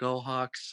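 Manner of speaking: mock hopeless, utterly depressed, beaten-down, defeated cheer. Retelling a parent's cheer during a lopsided loss: imitating a depressed, defeated cheer. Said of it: "the saddest, just most depressed".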